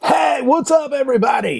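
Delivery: very high, hyped put-on DJ announcer voice. Describing dj friends who do weddings: imitating a dj voice. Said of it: "I do the D J voice".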